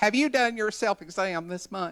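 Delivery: put-on sassy Southern accent. Retelling what a sassy colleague asked the office women: imitating Miss Lucille's sassy Southern accent. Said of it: "in that tone".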